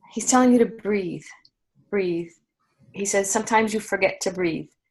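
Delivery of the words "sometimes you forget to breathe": normal talking voice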